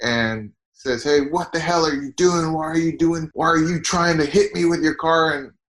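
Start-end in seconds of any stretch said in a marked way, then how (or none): 1.0-5.3 put-on, high-pitched hollering yell. Retelling a witness account of a man at a parked car: imitating a man yelling.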